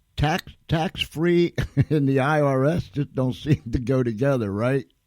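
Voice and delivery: high voice, laughing while talking. Telling about a tax-free whistleblower settlement, laughing while talking. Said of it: "excuse me for laughing".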